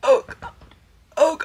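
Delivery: mock, very loud, high, overly dramatic gasping cry. Reenacting a man who could only get out these words: imitating someone dramatically gasping. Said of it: "let me just reenact a little bit".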